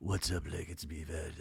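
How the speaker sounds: put-on husky voice, very deep, soft, sexy. Imitating a man's voicemail greeting, imitating a low sexy voice. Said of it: "he's using also like a bit of a sexy voice".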